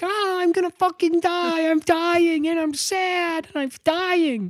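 very high, comic screaming half-scream wail. Describing a scene where he hangs from a ladder, imitating Matthew Perry screaming. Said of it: "And he's screaming, kind of screaming".

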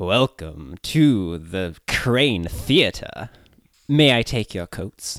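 posh upper-class voice, a little gruff and growly. Welcoming arrivals at the crane theater and offering to take coats, gruff, growly upper-class voice. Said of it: "higher class, but a little gruff. Like a little growly".

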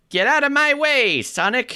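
very high, slow, stretched-out delivery. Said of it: "saying them in a Jon Lovitz voice".

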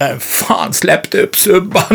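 put-on yelling. Retelling what the performer shouted back: imitating someone shouting. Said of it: "skrek han".

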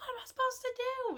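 loud yell, pitched very high. Telling how a crying man stood up and yelled, retelling a yell. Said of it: "he stands up and he yells".

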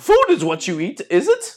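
high-pitched, swooping, back-to-front phrasing. Talking to the two dogs: Yoda voice. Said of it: "like when we talk like Yoda".

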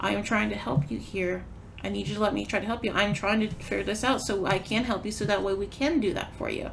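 ordinary delivery

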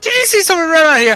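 very high, very loud shout. Picturing a little guild gnome asking about a runner: Jason's voice. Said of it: "in Jason's voice".

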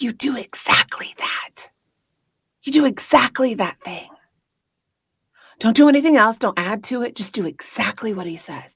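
confiding, secret-sharing tone. Acting out Mary calling the servants over to share a secret: whispering as Mary. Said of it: "kinda whispering in their ear".

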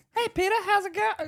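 very high, feminine, womanly voice. Telling friends how their dad sounds on the phone, imitating dad's woman-like phone voice. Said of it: "He even sounds like a woman on the phone".

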